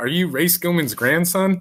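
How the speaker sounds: put-on ribbing yell. Retelling yelling at a kid in the game: retelling own yell. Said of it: "I just yelled at him".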